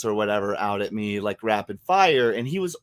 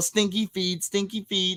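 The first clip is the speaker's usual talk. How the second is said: play-acted dad voice loudly hollering the words; 9 semitones higher than usual. Retelling what the dad yelled during a childhood game: imitating someone yelling. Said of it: "my dad would yell".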